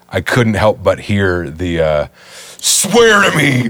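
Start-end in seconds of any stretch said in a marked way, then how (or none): 2.6-3.7 very high-pitched, forceful shout. Recalling him shouting in people's faces: imitating Batman shouting. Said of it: "When he was shouting in people's faces".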